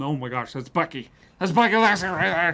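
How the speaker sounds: mock starstruck gushing, fast and rising. Retelling recognizing someone arriving at a commercial shoot, imitating excited fanboying. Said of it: "I was fanboying in the corner".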